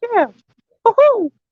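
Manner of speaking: pitched way up, squeaky and cartoonish voice. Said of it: "Mickey Mouse".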